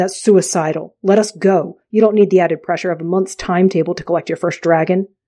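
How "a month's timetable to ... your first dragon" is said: plain reading voice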